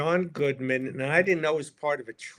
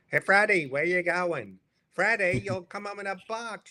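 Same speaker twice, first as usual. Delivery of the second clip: high, warm motherly voice; 6 semitones higher than usual. Doing an impression of Norm that sounds like a mother: Norm impression like my mother. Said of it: "My impression of Norm is sort of like my mother".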